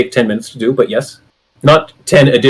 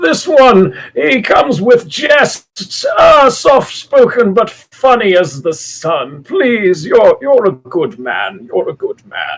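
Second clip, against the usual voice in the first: put-on frail old man voice, much higher, slower; 9 semitones higher than usual. Narrator voices an old, frail man praising a player character, frail old man voice. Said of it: "But, he's an old, frail man. / and he kind of chucks your shoulder a little bit. / we can't push an old man like me. / Have we been told up until this point that [name] is the mayor's nephew? / I'm qu".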